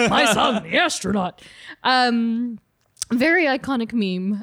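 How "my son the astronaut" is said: announcing comic-book character voice. Recalling childhood attempts to copy the line: J. Jonah Jameson voice. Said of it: "I'm gonna sound like J. Jonah Jameson".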